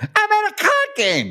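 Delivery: very high-pitched mocking voice. Retelling Gene's story of phoning Ace: mocking Ace voice. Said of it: "he mocks Ace with the voice".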